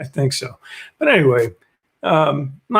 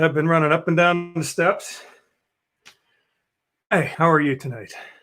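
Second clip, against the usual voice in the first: breathless, winded voice; 2 semitones higher than usual. Greeting an evening audience after running up and down the steps, out of breath. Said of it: "I'm out of breath".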